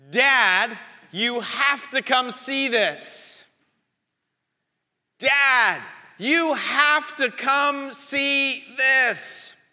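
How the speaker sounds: yelling out loud.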